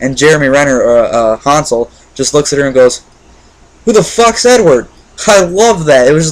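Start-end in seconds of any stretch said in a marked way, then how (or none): 3.8-4.9 high, incredulous, disbelieving delivery. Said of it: "the way he delivered the line was great".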